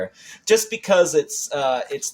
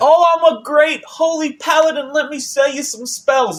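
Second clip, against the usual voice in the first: very high, sneering mocking put-on voice; 4 dB louder than usual. Mocking the game character Petrus: mocking Petrus voice. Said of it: "It's like".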